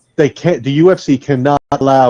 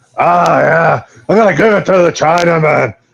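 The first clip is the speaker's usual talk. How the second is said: rough, raspy, sandpaper voice from the throat; 4 semitones higher than usual. Quoting a fighter's press conference line in a voice like drinking sandpaper. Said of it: "Why do you sound like you drink sandpaper?".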